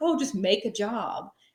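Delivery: slow, offhand, dismissive nonchalance. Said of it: "so nonchalantly was like".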